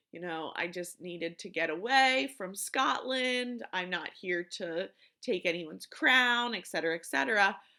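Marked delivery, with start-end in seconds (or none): none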